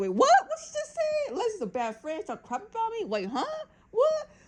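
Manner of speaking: acted, very high, swooping, bewildered confused babble. Retelling a reality show episode ending, imitating someone confused. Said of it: "she's confused".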